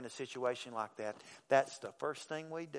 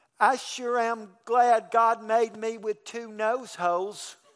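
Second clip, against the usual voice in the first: put-on very loud, high-pitched small child's voice; 9 semitones higher, 11 dB louder than usual. Retelling what a sick little boy said in the dark, little child's voice. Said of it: "came his little voice".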